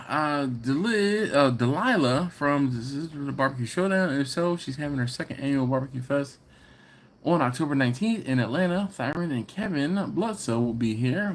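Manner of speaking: ordinary talk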